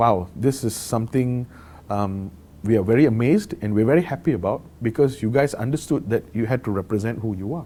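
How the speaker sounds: usual speaking voice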